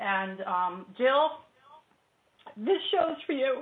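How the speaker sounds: choked-up voice catching with emotion. Dedicating tonight's show to the person you're filling in for, choked up. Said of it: "I'm all choked up".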